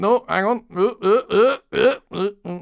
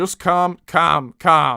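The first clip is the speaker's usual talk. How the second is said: light touch of northern English accent. Asking Ninja whether the word sounds right, trying it: slightly northern accent. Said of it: "just speaking a bit northern".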